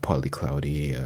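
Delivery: soothing, calm airline-pilot tone. Playing a pilot giving the weather to passengers, in a calm pilot voice. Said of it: "this is my airport um pilot voice".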